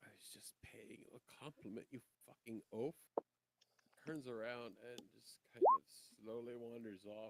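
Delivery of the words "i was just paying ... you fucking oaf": muttering under the breath, much quieter. A character watches another show off his golden torques, then speaks muttering to himself. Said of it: "[name] sees this display".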